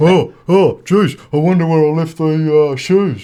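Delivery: dopey, dim, goofy doofus voice. Acting out how the guest's wife mimics him mid-dispute, doofus voice. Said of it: "doofus voice".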